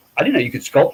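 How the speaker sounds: ordinary talk, nothing marked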